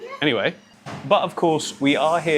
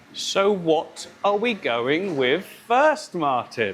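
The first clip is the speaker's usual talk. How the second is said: put-on creepy, high, very slow children's TV presenter voice; 6 semitones higher than usual. Asking the other speaker what goes in first: children's tv presenter voice. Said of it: "I don't know why I'm talking like that".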